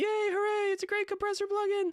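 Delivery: very high, thrilled, excited little cheer. Showing how a compressor plugin handles getting excited, yelling a little. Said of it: "maybe even yelling a little bit".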